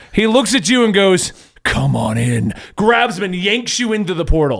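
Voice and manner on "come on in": very low, sultry, seductive villain voice. Voicing an evil Captain America pulling a player in: slightly sexual villain voice. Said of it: "Why do all of his evil people sound slightly sexual?".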